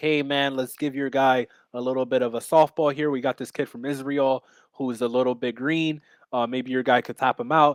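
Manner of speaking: ordinary talk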